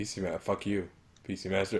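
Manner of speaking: muttering under breath. Retelling how the other speaker kept saying it: imitating muttering under breath. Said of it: "Just under his breath, he's saying shit".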